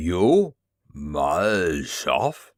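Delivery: low guttural growl from deep in the throat. Halting close to the other man, he recognizes him and speaks in a guttural growl. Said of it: "he growled in his guttural tongue".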